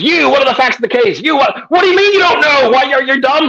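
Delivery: play-acted yelling, pitched very high. Retelling how a law professor called on students, imitating someone yelling. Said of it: "and just yelling at us".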